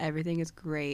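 flat monotone delivery. Recapping an episode, retelling a character's line in Joel's monotone voice. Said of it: "And like that same monotone voice".

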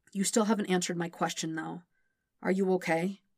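ordinary delivery

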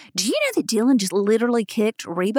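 ordinary talk

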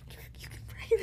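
soft, unvoiced, encouraging whisper.

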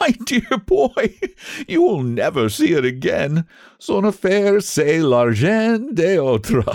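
high, speaking through bursts of laughter. Trevor answers Huey's dismay over giving away a sovereign, laughing while speaking. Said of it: "burst into a roar of laughter".

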